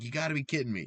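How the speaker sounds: put-on anguished, hurting, pained delivery. Recapping a Pokémon battle, retelling one player's reaction: imitating a pained voice. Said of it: "you hear the pain in Katie's voice".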